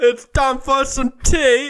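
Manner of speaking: loud, very high-pitched, put-on Cockney British accent. Hosts joke about things British people say: Ricky Gervais impression. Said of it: "just things British people".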